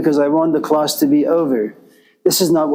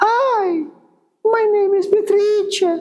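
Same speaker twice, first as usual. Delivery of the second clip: very high-pitched, slow, drawn-out put-on voice. Imagining Beatrice introducing herself, very high Beatrice voice. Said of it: "her voice is very, very, very high pitched".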